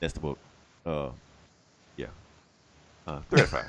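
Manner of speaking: tepid, unenthusiastic, underwhelmed tone. Giving a book a rating after summing it up: unenthusiastic. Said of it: "You sound thrilled".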